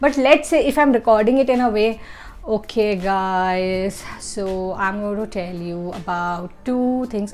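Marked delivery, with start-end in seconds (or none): 2.4-7.3 dull, sleep-inducing, flat, slow, low-energy monotone. Showing a boring way to record a video intro, flat, low energy. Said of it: "most of you are going to fall asleep".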